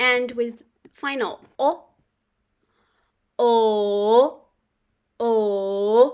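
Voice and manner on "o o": o dipping down, then rising, third tone. Teaching mandarin tones, the teacher voices the vowel o: falling-rising third tone. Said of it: "So your voice goes down and up".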